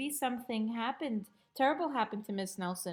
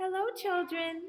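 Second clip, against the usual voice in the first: sweet storybook teacher voice, lightly pitched up; 8 semitones higher than usual. Reading a story aloud, voicing someone greeting the children: sweet voice. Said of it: "someone said in a sweet voice".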